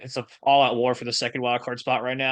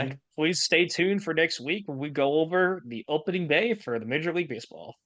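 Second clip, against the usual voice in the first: ordinary delivery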